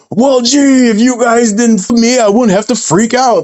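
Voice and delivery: mock very high, shrill screaming rant. Act out a man punched in the mouth answering people on a panel, imitating someone screaming. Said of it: "screaming at him".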